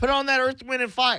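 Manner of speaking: put-on yelling.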